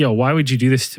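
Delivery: ordinary talk, nothing marked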